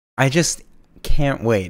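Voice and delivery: slow, heartfelt, moved, emotional longing. Reacting to news that the showrunner is returning: genuinely emotional. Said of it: "I'm getting genuinely emotional".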